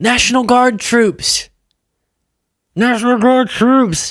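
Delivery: high-pitched, mocking pundit voice. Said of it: "I'm sure Scott would say".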